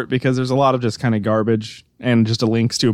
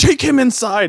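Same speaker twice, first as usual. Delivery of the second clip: very high half-yell, pitched way up; 12 semitones higher than usual. Retelling the end of a video, the man to his wife: imitating someone yelling. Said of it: "kinda yelling".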